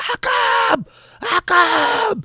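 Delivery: screaming from a distance. Game master voicing a character after a roll of fourteen, screaming from the back. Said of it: "you hear like screaming from the back".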